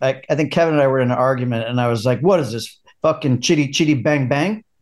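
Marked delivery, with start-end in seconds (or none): 2.2-4.6 put-on New York accent. Retelling a line said to Kevin during an argument, in a New York accent. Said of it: "Like with my New York accent".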